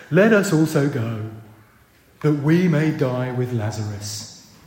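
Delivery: slow, low, gloomy, drawn-out drawl. Quoting Thomas to the disciples in verse 16: Eeyore voice. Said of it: "I'm doing the Eeyore voice here".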